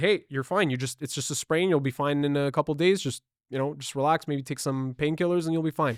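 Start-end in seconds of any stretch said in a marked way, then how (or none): none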